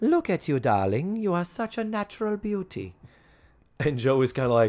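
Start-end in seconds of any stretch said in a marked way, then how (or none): 0.0-2.9 put-on Hungarian accent, higher. Retelling a guest star's line: Zsa Zsa Gabor impression. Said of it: "my expert, perfect Zsa Zsa Gabor impression".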